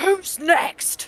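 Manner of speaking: very loud half-orc bellowing voice. Addressing the crowd after wiping his face, bellowing. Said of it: "before he bellows".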